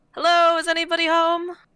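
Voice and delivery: loud, high-pitched calling out. Calling out to a boat in character, late at night: calling out. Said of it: "I guess I'll just call out".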